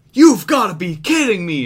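announcer voice suddenly yelling. Retelling how a commentator reacted to a rest hold: imitating someone yelling.

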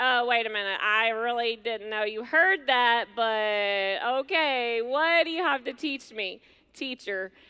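cocky, mocking delivery. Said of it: "Simon's a little cocky".

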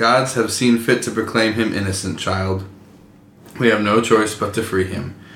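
ordinary talk

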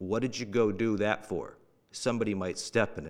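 acted dead-serious deadpan. Retelling what a father said at home, imitating a straight-faced delivery. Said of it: "Looks me dead in the eyes, straight-faced".

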